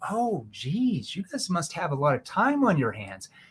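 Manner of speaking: teasing, playful sarcasm with swooping pitch. Demonstrating a reply to people rushing a meeting, playful, sarcastic tone. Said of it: "playful, sarcastic tone".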